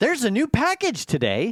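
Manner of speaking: very high, swooping, fake-excited enthusiasm. Imitating Alexa announcing a package: imitating Alexa's fake excitement. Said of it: "a fake excitement in the way it's delivered".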